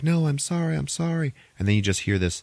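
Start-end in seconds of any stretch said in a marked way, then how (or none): 0.0-1.3 mock, very high, tearful sobbing. Retelling a scene where Lena apologizes to her dying mother: imitating Lena crying. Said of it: "Lena's crying".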